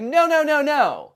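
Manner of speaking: very slow, loud, overly polite, swooping voice. Retelling what someone in a video said in an argument: imitating Dakota. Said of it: "But then Dakota's like".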